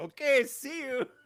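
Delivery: put-on high-pitched, chirpy voice with a thick Korean accent. Repeating the catchphrase you love to your co-host, in a Mr. Kim voice, very thick accent. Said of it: "he says it in like a very thick".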